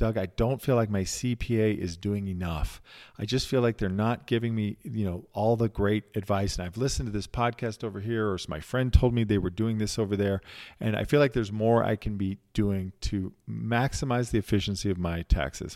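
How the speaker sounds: normal talking voice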